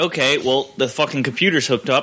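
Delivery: ordinary delivery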